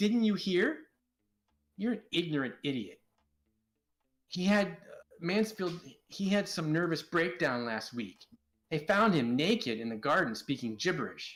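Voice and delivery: angry, snapping voice. Voicing Sloane answering a rude question from Biff: Sloane snapping at someone. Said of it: "Sloane snaps at him".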